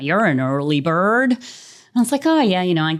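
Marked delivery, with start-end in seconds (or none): 0.0-1.3 bad, very poor put-on Canadian accent. Quoting a gentleman met in the lift, in a very poor Canadian accent. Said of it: "I'm going to do a very poor Canadian accent".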